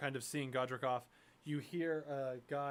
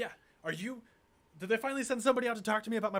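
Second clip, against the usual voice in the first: furious, frightened, angry, scared voice, loud and high; 8 semitones higher, 5 dB louder than usual. Narrator voicing a farmer who confronts the listener: angry and scared farmer. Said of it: "just angry and scared".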